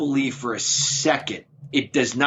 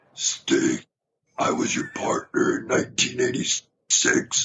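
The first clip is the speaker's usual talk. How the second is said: very slow, drawn-out character voice, every word dragged.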